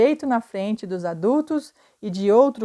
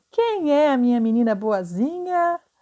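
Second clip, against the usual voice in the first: silly, put-on goofy voice, pitched up; 5 semitones higher than usual. Reading a story aloud, narrator talks to the dog on the bed: funny voice. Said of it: "fazendo uma voz engraçada".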